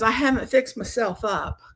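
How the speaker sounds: put-on little Southern belle voice. Retelling what mom said on meeting the birth mother: imitating a southern belle. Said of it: "the little Southern belle".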